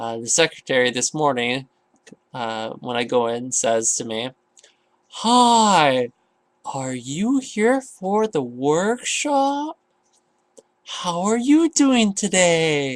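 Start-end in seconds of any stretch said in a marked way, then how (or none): 5.1-13.0 slow, high, drawn-out condescending receptionist voice. Retelling how the job agency's secretary greeted him, imitating slow speech. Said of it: "Exactly in that voice and tone and that slow of speech".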